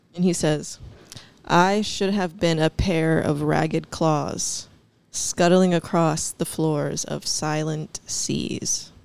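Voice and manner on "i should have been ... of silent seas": very slow, drawn-out, deliberate delivery. Quoting a line from a favorite poem in conversation, very slow. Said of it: "I said it real slow".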